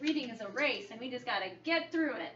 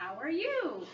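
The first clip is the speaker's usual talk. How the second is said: intonation rising at the end on "you". Practicing asking a partner how they are: rising question intonation. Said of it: "My voice went up".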